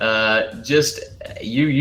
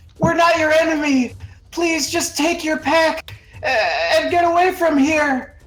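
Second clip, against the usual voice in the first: shouted, pleading, loud voice. Voicing a character dangling above a werewolf, shouting at werewolf. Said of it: "he's gonna look down at the werewolf and shout".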